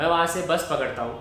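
ordinary talk

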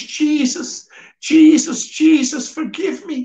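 mock frantic, desperate scream at the top of the lungs. Retelling the moment the speaker broke down crying, re-enacting a desperate scream. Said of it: "screaming at the top of my voice".

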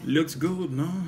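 put-on French accent. Two speakers joking about french words; speak in a french accent. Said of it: "Now you sound more French".

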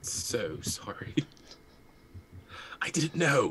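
quiet whispered voice. Voicing a character apologizing to another character: whispering in character. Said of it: "whispering to Ursa".

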